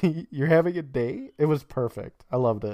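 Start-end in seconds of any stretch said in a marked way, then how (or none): 0.0-1.3 words bubbling out in a giggle, laughing through. Retelling a funny moment from an episode: giggling like Jed. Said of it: "that giggle that Jed did, he's like".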